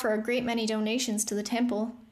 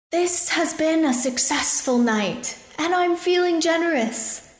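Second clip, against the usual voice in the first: loud, booming voice carrying across distance; 7 semitones higher, 7 dB louder than usual. Reading a story aloud, the narrator voices the armored scaled man: booming voice. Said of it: "the scaled man's voice boomed".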